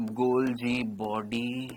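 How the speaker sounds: very slow, drawn-out, list-like delivery.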